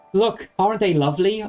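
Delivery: gentle, very high-pitched put-on character voice. Trying out a character voice that is easier on the throat: soft, high-pitched voice. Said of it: "maybe I can go for, like, a soft, high-pitched voice".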